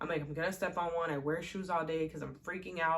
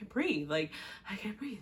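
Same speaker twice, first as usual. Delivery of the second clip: mock crying while panicking, tearful; 3 semitones higher than usual. Retelling a panic attack while crying: imitating crying while panicking. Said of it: "and I'm, like, crying".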